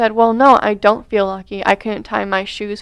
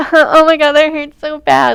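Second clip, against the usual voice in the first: words broken by laughter, high and raised; 6 semitones higher, 6 dB louder than usual. Recounting a woman hitting her cast in the car: imitating her laughing while talking. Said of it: "like laughing".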